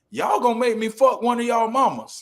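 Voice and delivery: shrill, very high-pitched shout. Retelling how hecklers got a reaction at a game: imitating Charles Barkley yelling. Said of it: "the clip where Charles Barkley yells".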